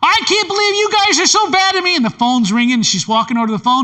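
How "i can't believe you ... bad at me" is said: shrill, scolding shout. Retelling a mom yelling at her kids while walking to the phone, imitating a yelling mom. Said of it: "She's yelling at you".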